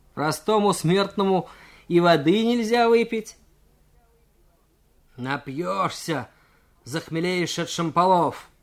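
scoffing, needling, mocking, sneering tone. Nikolai taunts the cadet who grabbed his shoulder; mocking. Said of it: "насмешливо спросил".

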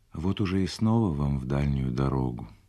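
ordinary talk

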